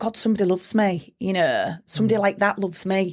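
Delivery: plain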